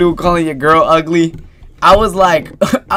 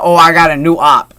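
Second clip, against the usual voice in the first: ordinary talk, nothing marked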